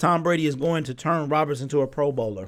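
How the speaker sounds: normal talking voice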